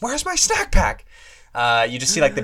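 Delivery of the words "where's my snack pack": shrill, very high-pitched yell. Recalling a movie scene's product placement: imitating Billy Madison yelling. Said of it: "where he just yells".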